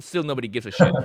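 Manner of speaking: ordinary delivery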